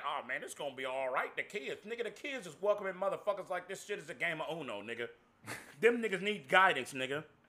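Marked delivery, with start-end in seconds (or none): 0.1-1.3 mocking voice, much lower and quieter. Speaker acts out what other people keep saying: mocking impression of people. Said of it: "acting like".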